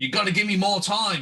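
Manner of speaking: high, pressing, urgent pleading voice. Playing a character calling to the crew while running cable: screaming. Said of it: "and I'm screaming to the rest of the crew".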